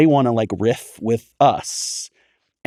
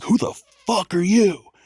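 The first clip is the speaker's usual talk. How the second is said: loud, gruff impression, much higher pitch. Recalling first sitting down as an announcer beside Mark Madden, imitating his loud, gruff voice. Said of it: "he was just like loud and gruff".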